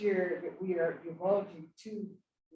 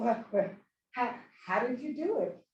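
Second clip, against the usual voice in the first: put-on chatty, pitched-up Southern US accent; 5 semitones higher than usual. Retelling what a woman said while looking at the scores: Kathy's southern accent. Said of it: "she said with her southern accent".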